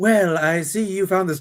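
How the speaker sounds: put-on British accent, spy style. Producing a photo of a man, a character speaks in a british accent. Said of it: "Bara's also talking in a British accent".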